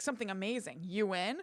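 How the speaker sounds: normal talking voice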